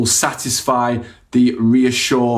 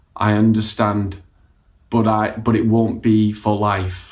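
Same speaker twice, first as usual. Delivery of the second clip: flat, slow, uncaring monotone; 2 semitones lower than usual. Replying to a parent worried about their child, in a really flat tone. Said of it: "This is said in a really flat tone of voice".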